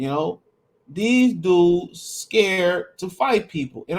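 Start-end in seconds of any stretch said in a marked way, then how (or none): 0.9-3.8 stressed scared, drawn out slow and high. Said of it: "I put the emphasis on scared".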